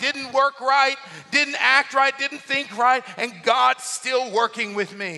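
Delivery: ordinary delivery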